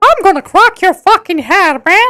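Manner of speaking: high, put-on cartoon mouse voice. Retelling an animation where a boss speaks: Mickey Mouse voice. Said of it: "the boss's voice was like, like Mickey Mouse".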